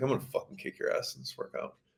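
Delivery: very soft, close, barely voiced whisper. Retelling a taunt someone said before a workout: imitating a whisper. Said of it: "I remember him whispering to me".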